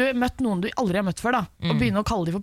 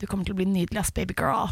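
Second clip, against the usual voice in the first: mock-condescending, put-on superior tone. Retelling what a woman looking down at her said when she was fifteen: mimicking a condescending tone. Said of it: "det var veldig sånn nedlatende tone".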